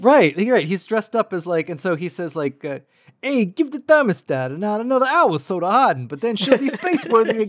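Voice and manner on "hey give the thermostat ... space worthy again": put-on high, 1920s-style Brooklyn huckster accent. Retelling a scene where a man dressed as a huckster speaks, 1920s Brooklyn huckster voice. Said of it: "kind of like a 1920s like huckster from Brooklyn".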